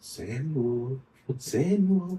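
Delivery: small whispering voice. Recalling a childhood memory while reading, the speaker imitates Miss Fraser's whisper. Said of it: "like a very whispering small voice".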